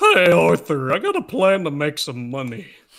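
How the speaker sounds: loud, big, drawn-out Southern drawl. Showing how the character Dutch sounds: Dutch as Southern Joe Swanson. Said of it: "he just sounds like a Southern Joe Swanson".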